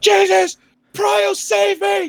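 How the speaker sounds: very high, drawn-out screaming like a madman. Roleplaying a character struck in the chest by a spell, screaming like a madman. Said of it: "he starts screaming like a madman".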